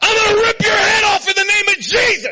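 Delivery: acted, shrill, high, all-out scream. Retelling charging at a player on the field: retelling a scream. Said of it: "I screamed with everything I had".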